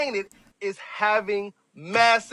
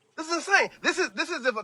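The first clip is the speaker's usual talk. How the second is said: stuttering, tripping over words, pitched-up restarts; 6 semitones higher, 4 dB quieter than usual. Struggling to wrap their head around the news, stuttering. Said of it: "if I'm stuttering".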